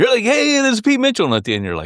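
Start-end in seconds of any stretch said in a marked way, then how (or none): 0.2-1.3 mock energetic, excited, very high pitch. A co-host mimics how the other host does their opening; imitating Pete Mitchell's excited opening. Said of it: "excited to get it going".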